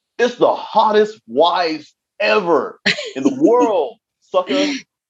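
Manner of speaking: very high voice with extra punch. Telling Leah how a line should sound, said with more umph. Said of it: "You got to say that with a little bit more umph".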